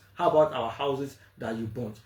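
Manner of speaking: normal talking voice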